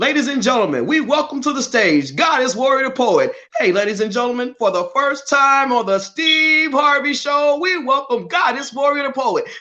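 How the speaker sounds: very high-pitched, announcer-style stage voice. Acting out being introduced on a tv show: imitating a tv show announcer. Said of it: "and so I started saying it, like".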